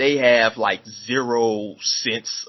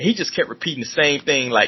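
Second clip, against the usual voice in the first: plain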